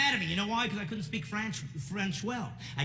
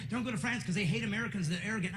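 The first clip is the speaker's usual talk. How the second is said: normal talking voice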